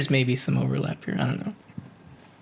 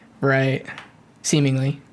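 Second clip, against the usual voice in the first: ordinary talk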